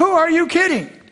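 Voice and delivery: put-on very high, all-out, top-of-lungs scream. Retelling a family jumping up at tv advertisements: imitating a scream at top volume. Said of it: "screamed at the highest, at the top of their voice".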